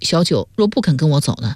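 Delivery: ordinary delivery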